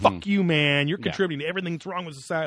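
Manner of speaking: furious, pissed-off, lashing-out angry rant. Retelling a mean question from a Reddit AMA: imitating a pissed-off commenter. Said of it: "all pissed off".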